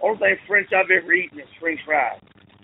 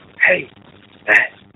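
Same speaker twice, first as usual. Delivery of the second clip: very low, loud, forced shouting whisper; 8 semitones lower, 6 dB louder than usual. Retelling a voicemail someone played, imitating Grace's whisper-yell. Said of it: "whisper yelling into the phone".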